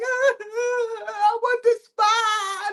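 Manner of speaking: the I stretched out, high and slow.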